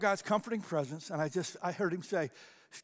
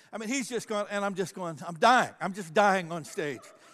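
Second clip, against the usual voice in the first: normal talking voice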